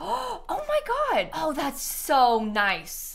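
very slow, high, drawn-out delighted gasp. Placing an object in a game and seeing how it slots: gasping in delight.

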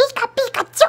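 very high-pitched, squeaky creature voice. Showing off an impression: Pikachu impression. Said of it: "Check out this Pikachu impression".

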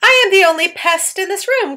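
loud, high-pitched outcry. Narrator reads the centipede answering the ladybug, crying out while grinning. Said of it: "cried the centipede, still grinning away".

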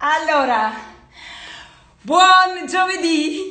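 winded, panting, out of breath. Greeting everyone at the start, out of breath. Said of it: "C'ho il fiatone".

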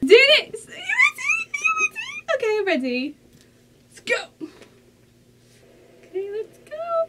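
very high, swooping, drawn-out thrilled excited shrieks. Before it has even started, the speaker tells viewers they're ready, screaming excitedly. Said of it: "because I'm already screaming and it hasn't started yet".

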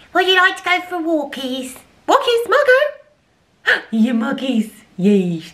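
very high, drawn-out silly voice. Talking to the dog Margo, the speaker uses a stupid dog voice. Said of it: "That is my stupid dog voice".

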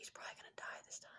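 hushed whisper. Retelling what their dad leaned over and whispered during the dinosaur scene, whispering. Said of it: "he whispered".

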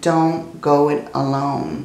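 ordinary delivery

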